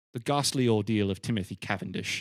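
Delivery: put-on English accent. Giving a film's title, read out in an English accent. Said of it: "I have to read it in an English accent".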